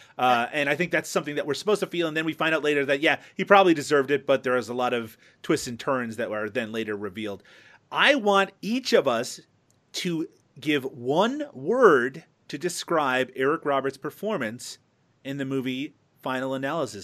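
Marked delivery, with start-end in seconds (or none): 7.9-17.1 very slow, drawn-out, deliberate, word-by-word pacing. Speaker asking each panelist for one word on a film performance, very slowly. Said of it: "I said that very slowly".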